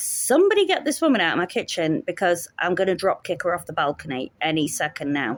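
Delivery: plain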